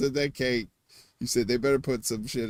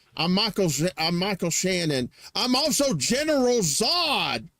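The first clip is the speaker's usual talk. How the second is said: put-on Texas drawl; 7 semitones higher than usual. Asked to show it, the speaker does a Michael Shannon impression. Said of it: "I do a pretty good impression of Michael Shannon".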